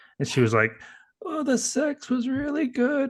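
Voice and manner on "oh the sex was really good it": put-on high, slow elderly woman's voice. Retelling what a man's wife in her late seventies said, imitating her voice. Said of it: "she talks like this".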